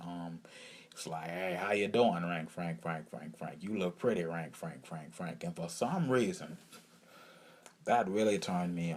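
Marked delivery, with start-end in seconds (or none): 1.3-5.4 friendly, put-on Southern accent. Retelling how Rank Frank greeted the speaker: imitating Rank Frank's Southern manner. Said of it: "he was so Southern".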